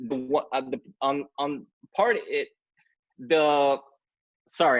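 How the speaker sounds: stumbling over words. Presenting an image to an audience and losing the thread, stammering. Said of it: "I'm like stammering a little bit".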